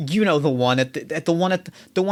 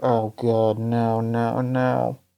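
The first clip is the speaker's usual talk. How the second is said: low, quiet mumbling to oneself; 6 semitones lower than usual. Retelling a man's reaction with his head in his hands, mumbling.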